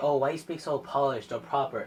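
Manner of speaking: normal talking voice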